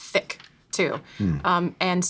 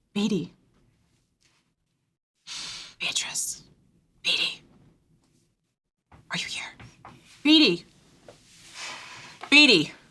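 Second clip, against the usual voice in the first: hushed whispered calling, turning insistent and urgent; 4 semitones higher than usual. Calling out for Beatrice in a silent place: whispering a name, growing urgent. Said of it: "in a whisper at first".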